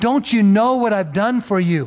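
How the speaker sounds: play-acted sobbing with anguished crying out. Retelling a father's cry to passing train passengers: imitating a sobbing cry. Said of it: "he's just sobbing, he's just crying out".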